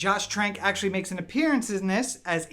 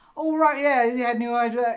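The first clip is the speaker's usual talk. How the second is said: put-on raised, easygoing, relaxed British accent; 5 semitones higher, 5 dB louder than usual.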